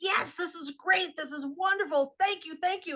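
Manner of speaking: giddy, gushing, very high, laughing elation. Retelling how Andy reacted after the bit, imitating Andy's excited laughing. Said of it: "Andy was jumping up and down and he was laughing".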